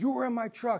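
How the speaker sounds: loud, high-pitched accusing yell. Retelling confronting a man he had just seen in his vehicle: retelling his own yelling. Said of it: "So I was yelling".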